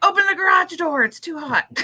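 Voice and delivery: high, loud, desperate, overheated yelled pleading.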